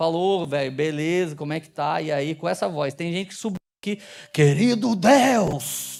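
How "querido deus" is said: loud, distorted, mock praying voice. Mocking people who change their voice when they go up to pray, mock distorted praying voice. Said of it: "muda o timbre, parece que tem um válvula Marshall na garganta".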